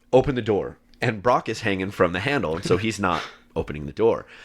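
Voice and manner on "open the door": usual speaking voice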